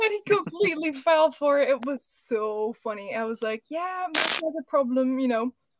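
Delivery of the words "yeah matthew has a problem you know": thick, strong put-on English accent. Retelling a prank on dad, posing as the vets, in strong english accent. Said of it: "talking like a super like England kind of accent".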